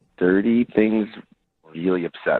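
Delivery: creepy, unsettling-sounding delivery. Saying how dirty things make you feel: creepy-sounding delivery. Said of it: "it sounded super creepy the way you said that".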